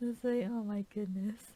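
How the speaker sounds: ordinary delivery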